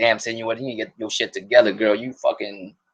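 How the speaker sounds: ordinary talk, nothing marked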